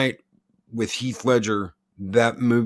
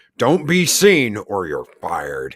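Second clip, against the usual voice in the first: put-on sarcastic superhero voice, louder; 4 dB louder than usual. Quoting older Batman's lines from the film: sarcastic older Batman voice. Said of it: "perfect for older Batman with the sarcasm".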